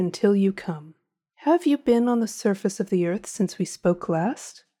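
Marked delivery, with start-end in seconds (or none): none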